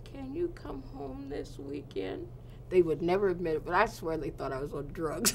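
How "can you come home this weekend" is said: small, high, most pitiful little voice. Retelling a phone call with the mother, imitating mom's pitiful little voice. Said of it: "in the most pitiful little voice".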